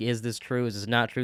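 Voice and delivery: plain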